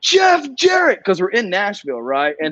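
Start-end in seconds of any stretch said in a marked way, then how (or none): 0.0-1.0 sudden, very high-pitched shouted yell. Retelling shouting out during a live wrestling show: imitating own past yell. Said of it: "I just yelled".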